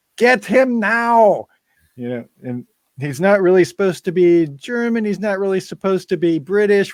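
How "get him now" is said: high-pitched yelling. Describing the Blofeld villain who yells orders, imitating Donald Pleasence yelling as Blofeld. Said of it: "He's always yelling".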